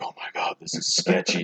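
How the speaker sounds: nervous, unvoiced whisper.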